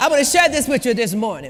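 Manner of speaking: put-on preacher voice with sermon cadence. Repeating the line to an audience as a joke: mock Baptist preacher voice. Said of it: "I sound like a Baptist preacher".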